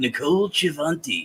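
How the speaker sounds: quiet, gentle delivery. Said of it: "with a Shatner voice".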